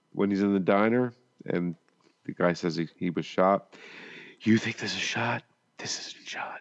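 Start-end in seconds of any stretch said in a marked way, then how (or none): 4.4-6.6 hushed, breathy whisper. Quoting the diner scene from Dark Territory; whispered Steven Seagal impression. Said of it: "I had to whisper it".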